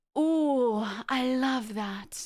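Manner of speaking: put-on "oh" stretched long in a rich old lady voice. Describing how an actress talks as an old rich lady, Jennifer Coolidge impression. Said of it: "Like she talks like this".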